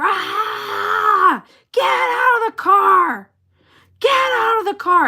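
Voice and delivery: very high, very slow, shrill, drawn-out scream. Retelling jumping out after a man backed into their car: retelling a scream. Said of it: "I jumped out screaming".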